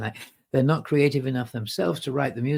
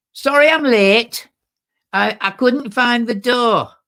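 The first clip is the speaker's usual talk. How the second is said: put-on broad, thick Manchester accent, very high and loud; 10 semitones higher, 10 dB louder than usual. Retelling a woman interrupting the vicar's prayer service, thick Manchester accent. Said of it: "thick Manchester accent".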